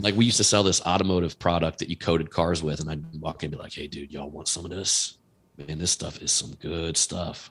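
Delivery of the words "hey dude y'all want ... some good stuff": low, hushed, under-the-counter sales whisper. Retelling walking in to sell a car coating, imitating own low whisper. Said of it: "You whisper".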